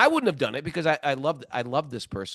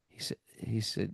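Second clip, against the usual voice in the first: ordinary delivery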